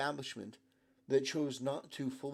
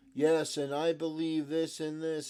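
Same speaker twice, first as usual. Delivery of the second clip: mock flat, monotonous, rehearsed reading delivery; 2 semitones higher, 5 dB louder than usual. Mocking a speech delivered like a teleprompter reading, in mock flat monotonous delivery. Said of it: "delivered in the most monotonous, rehearsed, teleprompter way imaginable".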